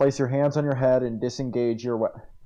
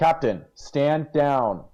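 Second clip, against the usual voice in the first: loudest, all-out, full-volume shout; 3 semitones higher, 4 dB louder than usual. A character calls out to the captain during a role-play scene, in the loudest voice. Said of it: "And I say this in like the loudest voice".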